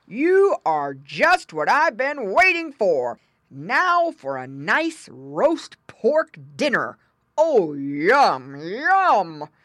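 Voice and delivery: slow growling bear voice, "yum" drawn out.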